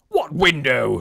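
irritated, annoyed. The Colonel questions a wailing boy, irritated. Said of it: "said the irritated Colonel".

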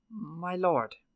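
tentative, unsure, halting, hesitant delivery. Will addresses the baron at a decisive moment, speaking hesitantly. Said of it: "he said hesitantly".

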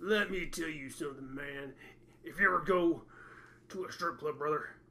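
put-on voice, dropped very low. Retelling a bowling teammate's advice, slipping into a Hulk Hogan voice. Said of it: "he started to sound like Hulk Hogan".

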